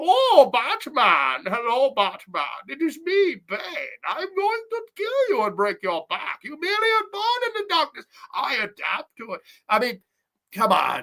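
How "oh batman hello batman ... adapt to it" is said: mocking swooping voice, high, slow and drawn out. Mocking a villain in a movie sequel: mocking Bane impression. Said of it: "the Bad Bane".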